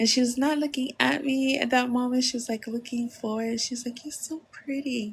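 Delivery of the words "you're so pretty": bashful, soft, shy, sweet little voice. Retelling a compliment from a stranger in a sweet, soft, shy voice. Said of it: "she was being so shy".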